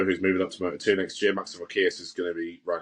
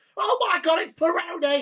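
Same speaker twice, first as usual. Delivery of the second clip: piercing, very high, shrieky commentator-style exclamation. Talking about a commentator, the speaker imitates Matt Dunn's shrieky voice. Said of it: "he's quite shrieky".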